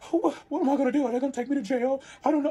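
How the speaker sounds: high, near-sobbing, on-the-verge-of-tears voice. Retelling how a friend panicked after a police stop: imitating someone about to cry. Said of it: "he's ready to cry".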